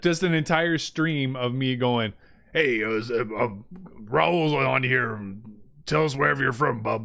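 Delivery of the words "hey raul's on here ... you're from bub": tough comic-book hero voice, delivered slower. Showing what a whole stream of Wolverine greetings to chat would sound like; Wolverine voice. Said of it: "Just that's my Wolverine".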